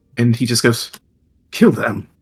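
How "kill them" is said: casual, unbothered, offhand, nonchalant tone. Voicing a drow ordering the attack on the party: nonchalant.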